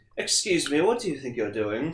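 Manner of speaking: put-on soft, stuffy, uptight British accent. Voicing Lucasite after a failed tackle, the speaker uses an uptight British accent. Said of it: "really like uptight British accent".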